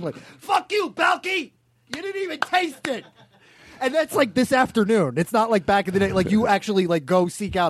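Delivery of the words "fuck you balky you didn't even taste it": play-acted very high, slow, drawn-out yelling. Imitating the other speaker yelling at an old sitcom: imitating someone yelling at the tv. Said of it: "yelling at, like, an old episode".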